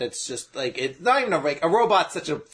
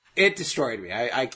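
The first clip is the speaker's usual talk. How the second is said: usual speaking voice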